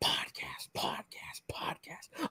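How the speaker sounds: very quiet, breathy, hushed, barely voiced whisper. Podcast host opening the episode while the fiance sleeps, whispering. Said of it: "I'm whispering because my fiance's asleep".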